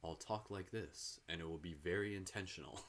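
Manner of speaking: very quiet, soft, low, calm meditation voice. Showing how they talk when doing meditation, in a meditation voice. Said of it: "using my like meditation voice".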